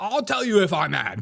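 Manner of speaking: play-acted testy, huffy, high-pitched voice. Imitating guys who insist they are not losing their cool: imitating a mad guy denying anger. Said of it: "you're just acting mad".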